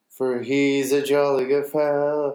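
ordinary talk

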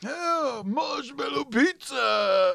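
put-on high-pitched cartoon turtle voice. Recalling how a cartoon character sounded, the speaker does a cartoon turtle impression. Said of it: "He goes like".

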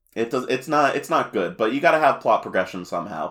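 ordinary talk

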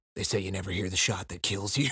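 rushed, rattled-off soldier-hero voice. Reading a line from the book aloud, in a Snake voice. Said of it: "You read that like you were Snake as well".

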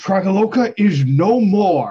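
very loud, slow, booming, drawn-out bellow. Voicing a character proclaiming to the town square: bellowing a proclamation. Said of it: "sort of bellows out across".

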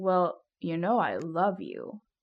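acted earnest tone. Retelling a marriage proposal, quoting the man, imitating his earnest tone. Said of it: "Like it was so actually earnest".

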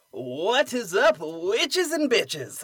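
brash radio shock jock style. Podcast host greets listeners at the top of the show, with shock jock energy. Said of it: "The shock jock energy".

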